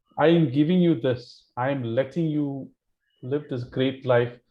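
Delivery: ordinary delivery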